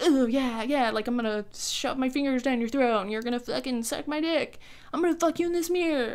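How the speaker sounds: put-on pushy, super aggressive, horny eighteen-year-old boy voice. Retelling a man's aggressive behaviour: imitating a horny eighteen-year-old boy. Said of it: "horny eighteen-year-old boy kind of attitude".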